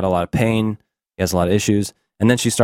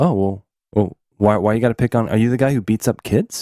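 imitated soft, quiet speaking. Retelling how Mike confronts someone: imitating someone speaking softly. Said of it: "Some A S M R for you".

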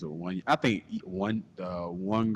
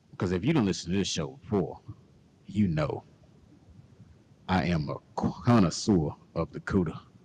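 put-on creepy voice, louder; 3 dB louder than usual. Show host addressing listeners, in a put-on creepy voice. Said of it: "in your creepy voice again".

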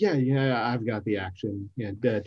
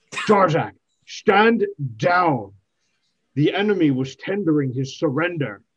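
loud, raised shout; 4 semitones higher, 6 dB louder than usual. In a tabletop game, the character steps between an ally and an elf, shouting. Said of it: "just shout".

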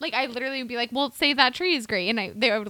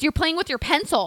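put-on scream, higher pitch; 4 semitones higher, 3 dB louder than usual. Retelling what a French teacher said in class: imitating teacher screaming. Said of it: "She's screaming at me in the middle".

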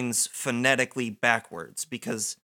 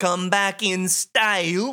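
put-on backwards-speech voice, higher pitch; 6 semitones higher, 4 dB louder than usual. Recounting a scene line by line: Man from Another Place voice. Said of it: "I love your impression of this voice".

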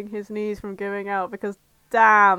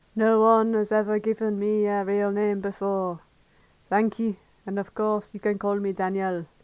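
acted, put-on French accent. Reading a story aloud, voicing the character Daniel in a French accent. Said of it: "if we're doing Daniel in a French on".

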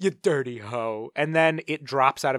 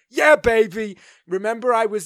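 put-on voice, high pitched, loud, drawn out; 9 semitones higher, 7 dB louder than usual. Showing how he'll give you a character's voice every once in a while, Austin Powers impression. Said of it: "he'll give you an Austin Powers".

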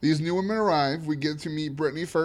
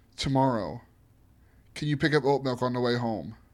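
put-on super serious voice, lower pitch; 4 semitones lower than usual. Retelling how Chris takes Lauren aside: imitating Chris, super serious. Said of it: "be super serious".

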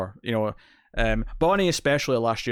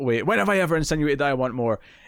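mock outraged, offended, indignant outburst; 4 semitones higher than usual. Retelling a scene where a character freaks out: imitating someone freaking out. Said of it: "she freaks out and says".

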